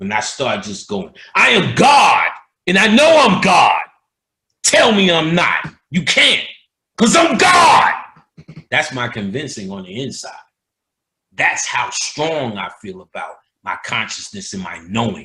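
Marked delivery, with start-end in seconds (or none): 1.3-7.9 aggressive booming shrill yell, very loud, high, swooping. Showing the aggressiveness used in lectures: aggressive declaration. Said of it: "I show you through my aggressiveness".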